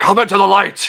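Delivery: gravelly, driven hero voice with grit. Comparing cartoon Batman voices, speaker performs a line in the Batman voice. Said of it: "That Batman voice".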